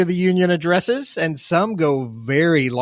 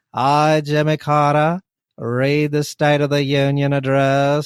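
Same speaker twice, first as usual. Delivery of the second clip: slow, dull, boring drawl; 2 semitones lower than usual. Doing a comic bit as a long-winded president: Jimmy Carter impression. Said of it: "The most boring sounding person on the face of the planet".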